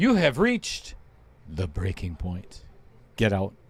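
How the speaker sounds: low, deep voice with swooping pitch. Demonstrating how to deliver the line, in a lowered voice. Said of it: "just lower your voice".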